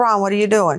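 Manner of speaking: normal talking voice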